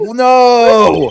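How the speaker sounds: put-on shouting voice. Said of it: "Even your honor's like".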